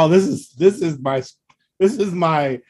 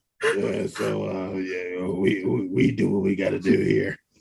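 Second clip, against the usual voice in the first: very slow, low, rough, creaky raspy alien voice; 6 semitones lower, 7 dB quieter than usual. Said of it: "They have to have a raspy voice".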